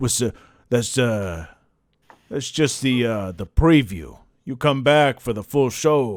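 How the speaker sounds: low, seductive, halting, hushed half-whisper. Narrating the orc leaning in to the player after a peck, Ted the orc half-whispering. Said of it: "a, a huge orc, / He just steps over it right up to you".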